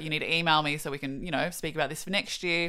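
ordinary talk

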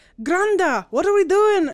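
put-on slipped-into Irish accent. Retelling a movie scene, quoting a character who slips into an Irish accent. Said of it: "accidentally fall into an Irish accent".

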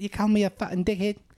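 put-on very high South African accent slipping into New Zealand accent. Imitating a movie villain who fights a beekeeper: attempted south african accent. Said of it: "he's got a South African accent, which I can't do anymore".

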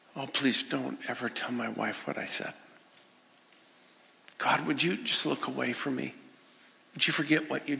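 whispered, low and quiet. Retelling a man's prayer to god: imitating a whisper. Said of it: "he whispers to God".

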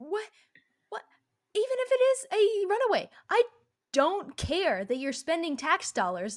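mock nonsensical, high, swooping, raging angry tirade. Ranting about police calling missing girls runaways: ranting in rage. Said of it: "the nonsensical rage of".

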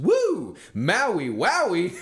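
acted overjoyed, very high, sing-song delighted whoop. Speaker retelling a cop searching their vehicle: imitating a delighted cop. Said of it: "he goes in the most delighted voice".

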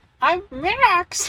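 odd, squeaky, very high, weird put-on voice. Co-host introducing himself on the MN Carpool Podcast, in a high-pitched put-on voice. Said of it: "his high-pitched voice".

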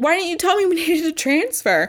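put-on shouted yell. Retelling how she found him on the next train, reenacting yelling at him. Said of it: "I'm like yelling at him".

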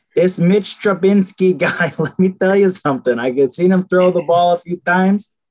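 thick, exaggerated put-on Chicago accent. Talking football, slipping into a meatball Chicago accent. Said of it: "just like a meatball Chicago accent".

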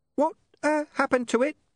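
very nervous, uneasy and apprehensive. Reading a story aloud, voicing the imp's question after the noise stops: very apprehensive. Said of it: "The imp said, very apprehensively".

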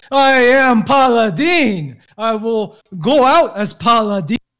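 put-on slow battle yell. Declaring in character while wrestling a foe: yelling out loud in character. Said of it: "I'll be yelling this out loud so everyone can hear it".

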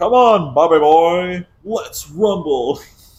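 very loud, slow, high, belted-out anime-style voice. Retelling a meme, imitating the Dragon Ball character's challenge. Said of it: "it's just like the Dragon Ball character".

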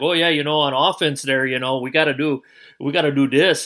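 put-on Wisconsin accent. Retelling a coach's talk show segment, imitating Majerus's Wisconsin accent. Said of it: "that Wisconsin accent there a little bit".

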